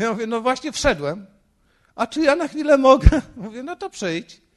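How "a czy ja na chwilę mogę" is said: put-on tearful, weepy voice, much higher and louder. Pastor retells a man calling up on the intercom, imitating a tearful voice. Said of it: "takim płaczliwym głosem".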